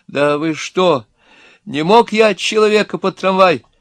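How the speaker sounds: high, imploring, begging, pleading voice. A man just locked in with others appeals to all of them: pleading. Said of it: "взмолился очкарик".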